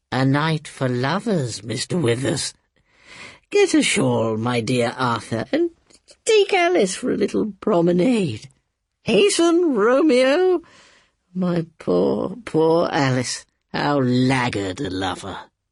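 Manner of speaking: oily, ingratiating, unctuous, swooping, sing-song coaxing. An old woman urges two young people to take a moonlit walk, unctuously. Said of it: "you know, / I shall be a very lonely old woman." / I shall be a very lonely old woman." / with inimitable unctuousness. / Read by Toby Jones".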